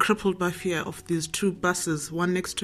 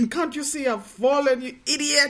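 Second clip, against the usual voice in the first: high, raised, retorting shout; 8 semitones higher than usual. Recalling falling off her bike, she re-enacts shouting at the man: retelling her own shout. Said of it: "but I'm shouting at him".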